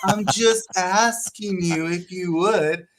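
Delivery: play-acted high, pleading puppy-dog voice. Commenting on a narrator's sudden voice change, imitating a soft puppy-dog voice. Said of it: "he totally changed his voice, like soft puppy dog".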